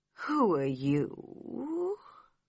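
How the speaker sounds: slow, soft, drowsy, sleepy voice. Reading a story, the caterpillar with a pipe asks Alice: slow, sleepy voice. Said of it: "said to Alice in a slow, sleepy voice".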